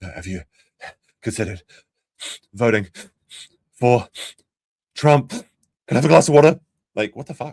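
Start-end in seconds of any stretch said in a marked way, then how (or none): 0.0-6.6 put-on out-of-breath panting. Imagining Jeremy at a stranger's door, mocking him: imitating someone out of breath. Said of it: "out of breath".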